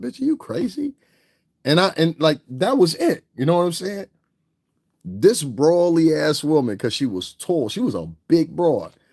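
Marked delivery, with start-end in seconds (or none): 0.0-0.9 very high-pitched mutter under the breath. Retelling what was said to a shopper in an aisle: imitating muttering under breath. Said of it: "I say under my breath".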